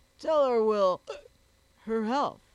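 speaking through hiccups. Pouring brandy into his tumbler, a man tells his companion, hiccuping. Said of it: "hiccuped Jack".

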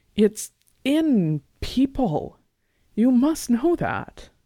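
rising voice, loud and swooping. [name] insists to Lars, her voice rising. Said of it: "her voice rising".

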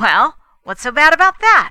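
very loud, high-pitched voice. Cutting into a discussion to challenge the point, breaking in loudly. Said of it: "Fay broke in loudly".

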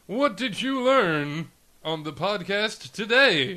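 high, loud, slow radio announcer voice. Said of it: "I'm gonna keep using my radio voice today".

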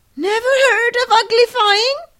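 sudden astonished, surprised outburst, very high. A creature, hearing a girl doesn't know a word, exclaiming in surprise. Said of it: "it exclaimed".

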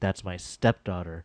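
acted cold, frosty tone. Retelling a stepmother's answer to the doctor, mimicking a very cold reply. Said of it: "she goes very coldly".

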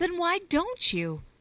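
earnest, begging, high pleading tone. Narrator reads one woman answering another in their conversation, pleading. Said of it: "pleaded Constance".

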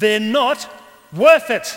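piercing, very loud, high scream. The fiend cries out as Jesus prepares to enter the world; screaming. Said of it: "screams the fiend now".

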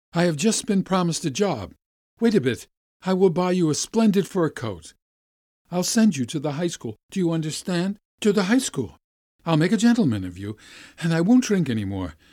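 overjoyed, eager voice. Reading a story, the narrator voices Putohin greeting the boy Vasya outside school: joyful. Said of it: "he says joyfully".

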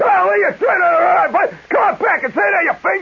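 very high-pitched yell. Retelling yelling back at guys yelling from cars driving by: retelling yelling back. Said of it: "I'm yelling back".

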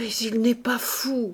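faltering, stuttering stammer. A woman insists that a man is not mad, stammering.

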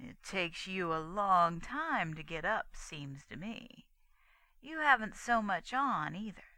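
slow, unhurried, drawn-out, stretched drawl. The sheriff speaks to a girl who has just got up, drawled. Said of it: "he drawled out".

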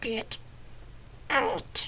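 hissed through clenched, gritted teeth. A woman in pain orders her visitor out, hissed through clenched teeth. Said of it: "She hissed from between her clenched teeth".

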